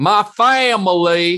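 put-on loud Southern accent, family drawn out long. Imitating a coach's new Southern accent: imitating Brian Kelly's Southern accent. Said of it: "He's got a really good accent now".

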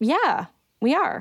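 yes with a note of surprise. Answering the interviewer's question, sounding surprised. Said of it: "You sound surprised".

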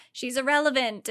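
ordinary talk

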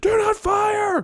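put-on shrill, high-pitched scream. Recapping a Hulk movie scene where Ross yells at the helicopters: imitating Ross screaming. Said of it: "He starts screaming out".

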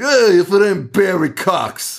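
put-on heavy New York accent. Retelling a movie, the speaker quotes Max greeting another character in a thick New York accent. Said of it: "has like a thick New York accent".

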